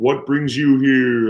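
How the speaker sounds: booming, loud voice, as if from offstage. Recalling the movie, the speaker imitates the wizard behind the screen: Wizard of Oz booming voice. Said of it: "Like the big booming voice".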